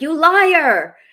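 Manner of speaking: booming, very loud, high accusing yell, liar drawn out. Actor recalling a scene where the tough character yells: retelling a yell. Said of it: "I come in and I yell at her".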